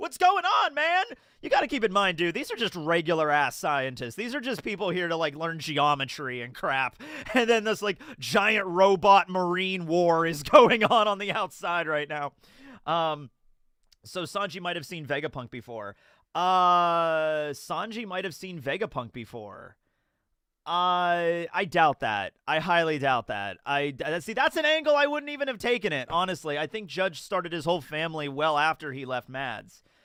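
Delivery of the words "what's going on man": high-pitched, loud, panicked pleading voice. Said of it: "scientists in here that are like".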